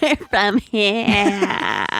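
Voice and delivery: mocking Valley girl voice. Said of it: "They talk like total Valley girls".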